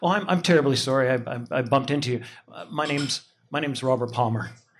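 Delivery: imitated classy, polite tone. Retelling how a stranger apologized after bumping into someone: imitating a classy polite apology. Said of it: "and he goes".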